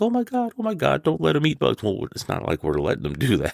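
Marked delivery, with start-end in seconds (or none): 0.0-1.8 very high, frantic freaking-out panic. Retelling how mom reacts when babies catch bugs: imitating a freaking-out mom. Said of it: "mom's freaking out like".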